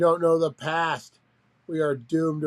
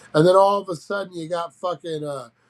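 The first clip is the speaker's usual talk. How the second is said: ordinary talk, nothing marked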